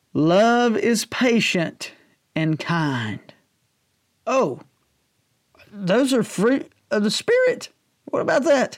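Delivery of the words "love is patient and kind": slow, unhurried, deliberate reading-aloud tone. Reading a passage from Paul aloud to listeners, reading slowly. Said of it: "I'm going to read this sort of slow".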